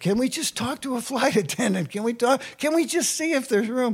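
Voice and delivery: high, urgent, begging, imploring pleading. Retelling how you begged her at boarding to get your guitar on, acting out pleading. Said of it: "start pleading with her".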